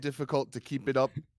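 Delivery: put-on British accent. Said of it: "I think my British accent is rubbish".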